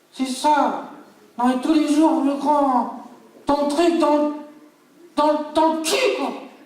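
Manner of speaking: very high, unruly, hard-to-handle puppet voice. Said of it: "[name] la marionnette qui est plutot dur à gérer".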